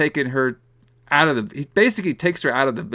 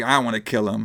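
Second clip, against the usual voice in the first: put-on panicked voice, lower; 4 semitones lower than usual. Retelling how Maria freaks out in the plot: imitating Maria freaking out. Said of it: "Maria freaks out".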